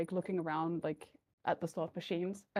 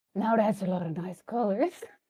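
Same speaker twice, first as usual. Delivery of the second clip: put-on chummy, friendly, tipsy, drunk voice; 5 dB louder than usual. A tabletop game player stumbles over really friendly, pretending to be drunk. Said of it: "I'll pretend to be drunk".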